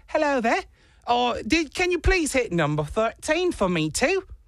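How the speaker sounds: put-on high, very thick British accent. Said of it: "very thick British accent".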